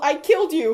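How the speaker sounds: snarling delivery. Reading a fanfic aloud, a stabbing character speaks: snarling. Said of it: "He snarled".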